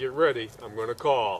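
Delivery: hushed half-whisper, under the breath. Retelling half-whispering a warning before calling the coyote: retelling a half-whisper. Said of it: "I whispered to him".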